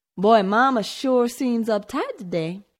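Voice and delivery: grumbling, griping, put-upon complaining tone. Reading a story, he remarks to Jennifer about Mama: complaining. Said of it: "he complained".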